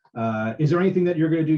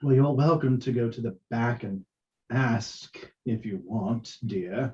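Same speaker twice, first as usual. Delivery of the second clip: put-on cool, cold, level voice with light British accent; 3 semitones lower, 4 dB quieter than usual. Voicing an elf answering the orc: cold, even elf voice with slight British lilt. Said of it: "very cold, even tone ... lilt of British".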